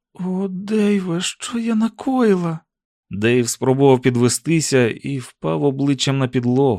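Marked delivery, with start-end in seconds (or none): 0.2-2.6 whispering, much higher, slower. Narrator voicing a woman speaking to the man who has just fallen: whispered. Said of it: "прошепотіла Сюзан".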